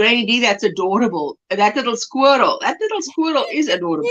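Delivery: ordinary delivery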